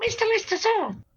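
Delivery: very high squeaky mouse voice. Retelling a TV scene, imitating a saluting lab mouse. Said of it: "Lister does an excellent impression of a lab mouse saluting him".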